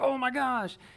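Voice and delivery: play-acted, really thrilled, high, excited gush. Retelling how a commentator reacts to a shot: imitating Chandler Fry excited. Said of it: "he gets really excited and he's like".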